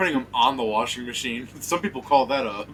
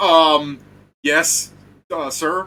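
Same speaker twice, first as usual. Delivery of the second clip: caught off guard, flustered, very loud, very slow; 5 semitones higher, 9 dB louder than usual. Game narrator voicing a man a screaming secretary confronts, caught off guard. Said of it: "the guy just kind of like off guard".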